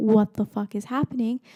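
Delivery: put-on furious voice. Retelling her mom finding her on the hospital floor, mock-angry, as mom. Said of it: "She got so pissed".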